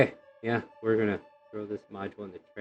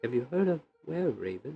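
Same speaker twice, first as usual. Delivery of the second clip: hushed, very quiet, pitched-up voice; 5 semitones higher, 4 dB quieter than usual. Narrating a scene, the speaker voices a woman asking a question: quiet voice. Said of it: "And she gets real quiet too".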